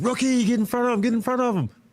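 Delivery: very high-pitched, shouted coaching-style yell. Recalling a game as a rookie guarding M J, imitating Chris Ford yelling. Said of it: "Chris Ford's yelling the whole time".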